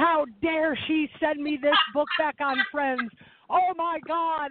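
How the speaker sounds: really angry, worked-up, high outburst. Retelling receiving a book and letter back: imitating own past anger. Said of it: "I just remember getting really angry, like".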